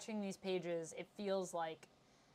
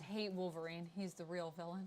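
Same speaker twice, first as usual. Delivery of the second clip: normal talking voice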